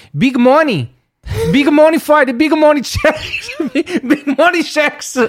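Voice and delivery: very high-pitched put-on Brazilian accent. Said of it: "I just wanted to do my Brazilian accent".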